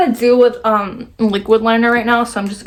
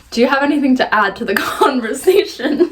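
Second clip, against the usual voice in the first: ordinary talk, nothing marked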